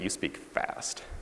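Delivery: slow, whispered speech.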